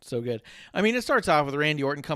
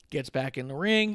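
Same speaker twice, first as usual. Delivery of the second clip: plain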